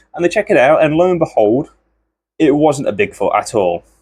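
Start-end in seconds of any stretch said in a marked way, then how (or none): none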